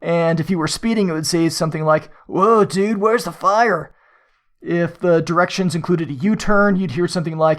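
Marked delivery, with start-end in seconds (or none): 2.2-3.9 bad, lame put-on Californian accent. Imitating the navigation voice reacting to speeding: lame Surfer Dude accent. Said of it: "I apologize for the lame accent".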